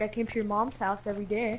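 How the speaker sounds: ordinary delivery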